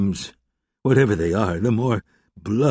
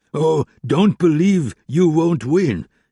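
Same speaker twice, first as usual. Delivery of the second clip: sudden, almost ecstatic outcry, high and slow; 5 semitones higher, 4 dB louder than usual. Narrator reading a man's reply in a conversation, crying out almost in rapture. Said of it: "he cried suddenly, almost in rapture".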